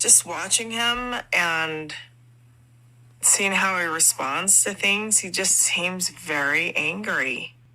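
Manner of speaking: very slow, unhurried, deliberate, drawn-out speech. Describing how Cody seems angrier over the years: speaking very slowly. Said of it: "She is speaking very slowly".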